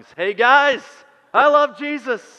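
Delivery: high, loud, slow yell at the top of the lungs.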